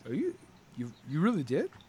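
very quiet, stammering, swooping, appalled, aghast disbelief. Voicing a character who learns the other quit smoking: aghast, shocked disbelief. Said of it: "he looks really aghast".

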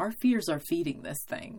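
ordinary delivery

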